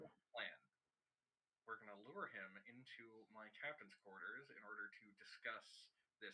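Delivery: very quiet, hushed, scheming half-whisper. In a role-play scene, a player shares a plan in character, half-whispering. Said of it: "You don't need to actually whisper".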